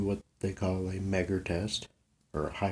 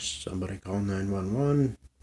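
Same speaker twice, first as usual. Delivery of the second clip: ordinary delivery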